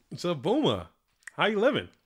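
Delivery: talking around a lozenge. Welcoming someone back while eating a cough drop; talking with a cough drop. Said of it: "I'm over here eating these Ricolas".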